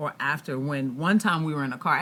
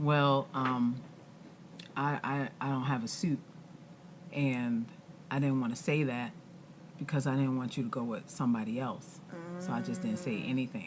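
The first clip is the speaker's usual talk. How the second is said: very soft, very hushed, calm, soothing voice; 4 semitones lower, 9 dB quieter than usual. Retelling his answer about having no suit: imitating his calm, soothing voice. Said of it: "in the same calm, soothing voice that he always speak".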